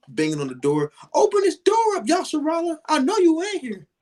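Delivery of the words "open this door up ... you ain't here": mock yelling, much higher. Describing a wife banging on the bedroom door, retelling a wife yelling.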